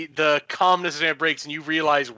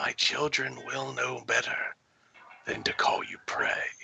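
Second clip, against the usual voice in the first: inner-voice whisper, lower and quieter; 3 semitones lower, 9 dB quieter than usual. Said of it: "you hear the whisper in your head again".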